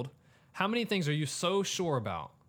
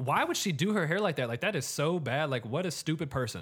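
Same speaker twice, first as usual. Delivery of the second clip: ordinary delivery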